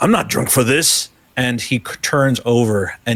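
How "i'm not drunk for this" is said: words thrown out loudly. A game narrator voicing a character as the building shakes, shouting. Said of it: "he just shouts out".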